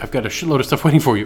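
ordinary talk, nothing marked

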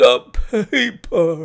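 sudden, high, loud croaked cry. A man coming back to his senses speaks up from behind them, croaking. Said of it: "croaked a voice behind us".

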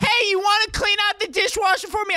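very high-pitched yelling. Retelling how mom talks while standing right next to them: imitating mom yelling. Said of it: "my mom just yells in general".

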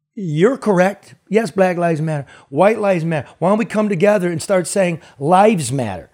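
usual speaking voice

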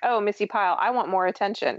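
ordinary delivery

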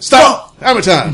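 abrupt, high, loud blurted-out outburst. Speaker retells an unarmed guy's sudden outburst to two others, retelling a blurted outburst. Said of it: "just blurts out".

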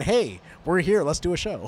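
ordinary talk

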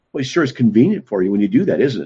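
taunting, derisive, mocking tone. Recounting an atheist's remark to the speaker, imitating someone mocking. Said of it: "He said it mockingly".

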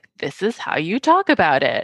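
ordinary delivery

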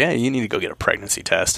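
acted-out joking, teasing tone. Recounting a remark once made to a woman, retelling a joking remark. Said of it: "I just said it jokingly".

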